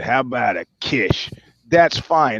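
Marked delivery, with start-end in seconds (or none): 0.0-1.3 mock-drunk slur, lower and slower. Retelling a clumsy come-on during an interview: drunk Joe Namath impression. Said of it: "you're completely drunk and you say".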